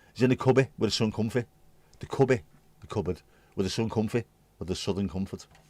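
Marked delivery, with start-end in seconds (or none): 0.2-1.5 put-on broad Scouse accent. Retelling how an old-school Scouser answered the speaker's dad, thick Scouse accent. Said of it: "had the most ridiculously thick Scouse accent".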